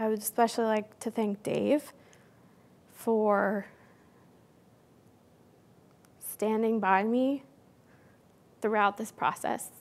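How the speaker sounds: emotional, choked up, voice breaking. Thanking a mentor at the end of a talk, emotional, voice breaking. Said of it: "sorry, I'm gonna get emotional".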